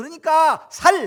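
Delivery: put-on loud Gyeongsang accent. Retelling a father-in-law who cannot pronounce the word: imitating father-in-law's Gyeongsang accent. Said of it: "하루 종일 얘기해도 쌀이 안 돼".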